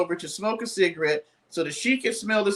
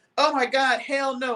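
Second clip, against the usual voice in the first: put-on high, screamed yelling; 6 semitones higher than usual. Retelling reactions while watching tv: imitating screaming at the tv. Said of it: "I'll be screaming at the T V like".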